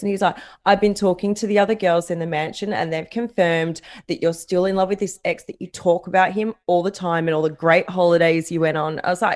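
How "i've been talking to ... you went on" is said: plain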